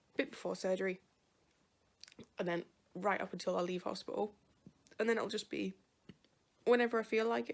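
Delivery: talking with hiccups, interrupted by hiccups. Vlogging about plans before surgery, talking with hiccups. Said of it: "Sorry, hiccups".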